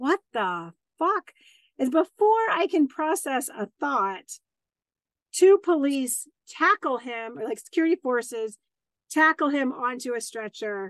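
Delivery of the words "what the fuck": acted-out shocked, stunned reaction. Telling of a man screaming a threat at him, retelling own shocked reaction. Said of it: "And I'm like".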